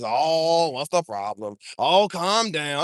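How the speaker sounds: put-on very slow, patronizing, condescending old-man drawl. Imitating people who brush off an argument, old man complex tone. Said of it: "this old man complex".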